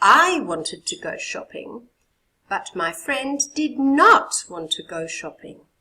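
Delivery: marked stress with clear rising-falling tune throughout. Teacher models a corrected sentence for students: stressed, rising-falling intonation. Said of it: "Hear the stress and the up and the down".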